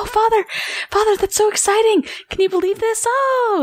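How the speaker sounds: very high, giddy, gushing excitement. Narrating a scene where Vivian sees Father coming out; freaking out excitedly. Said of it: "she's just kind of freaking out in".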